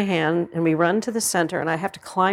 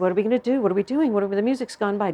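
crying with tearful panic; 2 semitones higher than usual. Retelling being stuck on stage as the music passed: retelling own crying. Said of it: "So I start crying".

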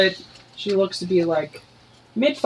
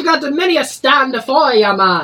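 put-on Jamaican accent, higher and louder; 6 semitones higher, 5 dB louder than usual. Voicing a shopkeeper greeting a customer: put-on Jamaican accent. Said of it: "I'm gonna try to do something Jamaican".

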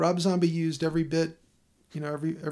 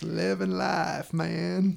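put-on celebrity voice, rough and creaky. Reading a note meant to be read in a Matthew McConaughey voice. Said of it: "This is to be read in a Matthew McConaughey voice".

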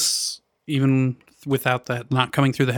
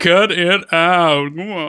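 very slow, drawn-out, awful sitcom-style delivery; 5 semitones higher, 4 dB louder than usual. Doing a pretty good impersonation of Uncle Joey: Uncle Joey impression. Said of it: "pretty good impersonation of how horrible he was".

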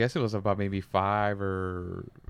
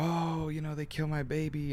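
put-on high, anguished, grieving screaming cry; 7 semitones higher, 6 dB quieter than usual. Retelling hearing the mother come out: imitating a mother screaming. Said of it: "I heard the mother come out screaming".

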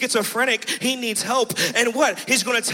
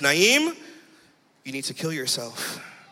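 very low, swooping, domineering, evil voice of authority; 9 semitones lower, 3 dB quieter than usual. Retelling what an evil voice told him: imitating an authoritative voice. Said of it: "this voice was authority, like, he owned me".

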